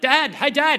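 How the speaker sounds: high, loud shouting. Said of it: "wind down the window and yell out".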